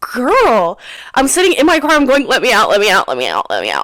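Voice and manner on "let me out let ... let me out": very low, rushed, repeated sobbing plea. Retelling being stuck in your car, begging to get out: retelling sobbing pleas. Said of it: "I'm like sobbing".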